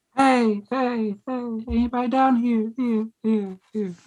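very high, very drawn-out, slow echoing call. Shouting to see if anybody is down here, adding an echo: yelling with a fake echo. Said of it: "why are we yelling?".

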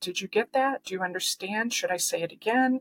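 ordinary talk, nothing marked

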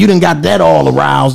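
usual speaking voice

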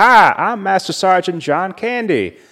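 high, loud southern drawl. Describing a movie scene, Arnold on a treadmill with a southern good ol' boy accent. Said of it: "a hilarious southern, like, good old boy accent".

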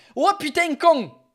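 accent from Marseille. Trying the one phrase the speaker can do in a Marseille accent. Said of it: "That's all I know how to do in the Marseille accent".

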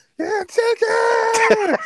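high, super-loud, all-out shrieking scream. Telling a story, the speaker acts out a man's subconscious; retelling a super-loud scream. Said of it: "started screaming like super loud".

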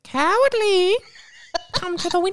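put-on very high, crone-like old woman voice. Retelling what a voice called out to someone, in an old woman voice. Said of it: "It was like an old woman".

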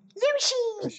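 very high, squeaky, squealed call.

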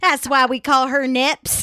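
twangy country accent. Explaining a friend's nickname to the group, country twang. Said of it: "this country twang thing we got going on".

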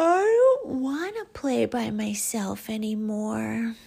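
drowsy, half-asleep. Reading a story aloud, Albie answers Owl asking why he's not in bed: sleepy. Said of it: "Albie said sleepily".

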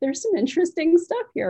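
high, musing voice of discovery.

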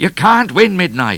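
very high, loud yelling. A pursuing trooper calls to a fleeing rider, shouting. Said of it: "shouted O'Grady".

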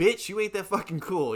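irritated, dismissive, angry, fed-up tone. Thinking of certain people grown up with, acting out being mad. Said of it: "it makes me so mad. I'm like".

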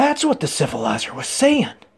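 excited near-shout with swooping pitch. Pointing at someone, he speaks to the staring crowd; excited, nearly shouting. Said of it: "Jonko nearly shouted".

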